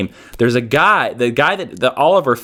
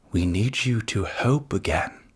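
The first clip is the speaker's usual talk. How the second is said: weak, soft, slow, drawn-out whisper; 4 semitones lower, 9 dB quieter than usual. Imitating Patrick Stewart as Professor X in a whisper: Patrick Stewart whisper. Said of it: "that was not a good".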